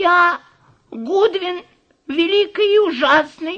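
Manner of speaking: very high, quavering, trembling, frightened voice. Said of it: "дрожащим голосом ответил человечек".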